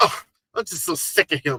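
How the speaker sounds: put-on Valley Girl voice. Acting out for others how she said she was bothered, imitating a valley girl. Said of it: "You know you got a little valley girl in you".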